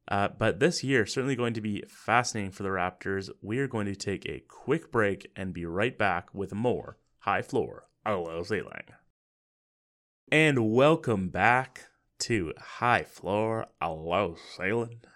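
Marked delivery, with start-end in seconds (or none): 10.3-14.9 slow, slight put-on country accent. Podcast host welcoming listeners back after a break, in a country voice. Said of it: "I'm kind of doing like a bit of like a country".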